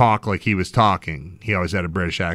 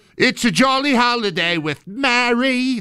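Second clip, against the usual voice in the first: very high, slow put-on Cockney, one word stretched. Imagining the dog talking like a chimney sweep: put-on chimney sweep cockney. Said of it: "like a chimney sweep".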